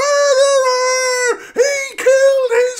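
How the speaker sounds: shrill, very high, very loud accusing scream. Retelling how Paul Bearer accuses The Undertaker: imitating Paul Bearer screaming. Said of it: "he screams it on Raw".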